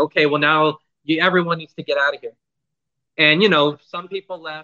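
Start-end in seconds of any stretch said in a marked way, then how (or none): none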